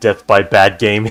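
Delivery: ordinary delivery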